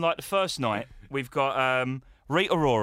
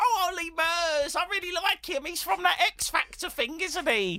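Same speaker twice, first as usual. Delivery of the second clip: put-on very high old lady voice. Imitating old ladies at a christmas lights switch-on: imitating old ladies. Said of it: "all the old ladies are like".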